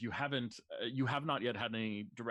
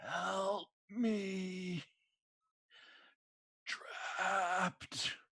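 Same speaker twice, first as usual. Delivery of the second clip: very high raspy creature voice, "me" stretched; 9 semitones higher than usual. Narrating a creature that opens its eye and looks at you, raspy voice. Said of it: "you hear this raspy voice".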